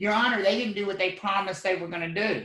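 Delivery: normal talking voice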